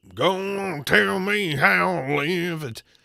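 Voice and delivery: corny, cliché, cheesy slow rock-vocal delivery. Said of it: "some cheesy deep voice".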